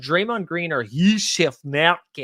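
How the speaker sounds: slow, put-on Scottish accent. A host comparing basketball player picks reads two names in a put-on scottish accent. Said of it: "I do the Scottish accent every time".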